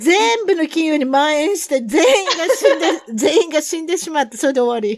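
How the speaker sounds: loud talk breaking into laughter throughout. Speaker telling a story, then apologizing for laughing, laughing while telling. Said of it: "笑っちゃってごめん".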